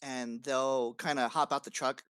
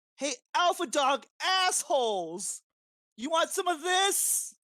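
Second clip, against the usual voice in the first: shrill, high, screaming taunt; 4 dB louder than usual. Player charging through the building's front door at the Alpha Dawg crew, screaming taunt. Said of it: "you're screaming that".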